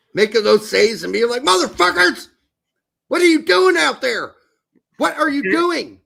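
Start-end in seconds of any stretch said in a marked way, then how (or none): 1.4-5.8 put-on angry yell, higher and louder. Retelling a goalkeeper's angry reaction after saves: imitating a goalkeeper yelling. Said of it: "he was yelling".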